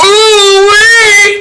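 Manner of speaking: mock squeal, high and loud. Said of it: "is her response".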